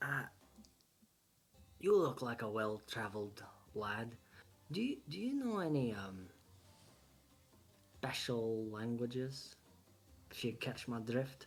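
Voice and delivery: half-whispered in a character voice. Half-whispering in character to another player, asking about special languages: half-whispering in character. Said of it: "I whisper to you".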